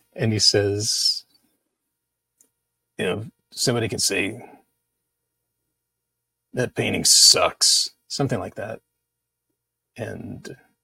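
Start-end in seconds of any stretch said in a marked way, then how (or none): 3.6-7.9 put-on gruff voice. Recalling a film where a photographer narrates his work, doing Chuck O'Rear gruff voice. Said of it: "It's like this gruff voice".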